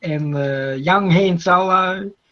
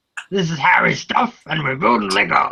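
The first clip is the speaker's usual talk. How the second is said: very deep, low-pitched voice. Doing an impersonation of Howie from the chat: deep voice imitating Howie. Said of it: "trying to do an impersonation of Howie's".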